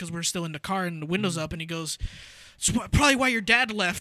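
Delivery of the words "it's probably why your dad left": very loud, pitched-up voice, just short of a yell. Retelling their dad's remark in the car with the window up; imitating someone saying it loudly. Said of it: "not yelling, but kind of loudly".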